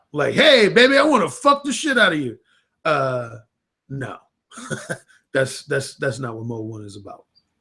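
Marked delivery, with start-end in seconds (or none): 0.4-2.4 brash, crude, high bellowed holler. Acting out a man going up to a woman, yelling. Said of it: "just yelling some shit out".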